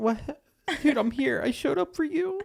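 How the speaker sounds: put-on tearful, very high-pitched, pleading crying. Retelling showing up unannounced at an ex's house: mock crying. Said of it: "I'm just imagining you doing that when crying".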